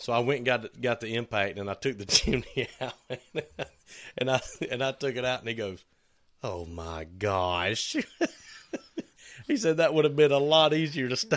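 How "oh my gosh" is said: put-on Yankee accent, lower, much slower. Retelling what he said on seeing the chimney out, in his little Yankee accent. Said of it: "In his little Yankee accent".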